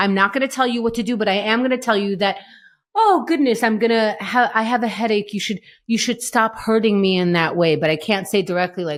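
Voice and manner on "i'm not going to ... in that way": plain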